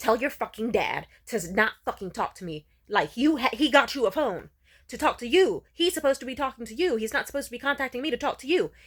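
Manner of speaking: mock enraged, loud, furious storming tirade. Retelling how the mother stormed into the room: imitating an angry outburst. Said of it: "she got so angry at him that she projected that anger onto me, and she stormed into my room like".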